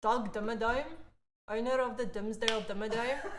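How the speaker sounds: put-on Afrikaans accent. Called up to perform, saying the Doug Dimmadome line in an Afrikaans accent. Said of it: "Channel you in Afrikaans accent".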